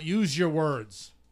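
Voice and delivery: playful, joking yell, acted out. At a hockey game as players start fighting, retelling a joking yell. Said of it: "I just jokingly yelled out".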